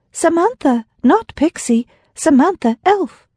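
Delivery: put-on small, very high, slow childlike voice. Pushing away a man's reaching hand; small, childlike voice. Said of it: "In a small, childlike voice".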